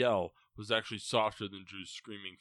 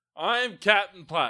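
very loud, high, proud exclaiming; 9 semitones higher, 11 dB louder than usual. Recalling what they said earlier: retelling an exclamation. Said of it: "I was exclaiming".

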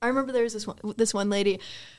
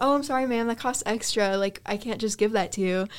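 ordinary delivery

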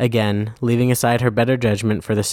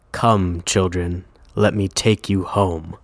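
gruff, rumbling, deep and gravelly reassuring voice; 3 semitones lower than usual. Narrator reading Krampus assuring the children, in a deep gravelly Krampus voice. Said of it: "Krampus's deep, gravelly voice assures them".

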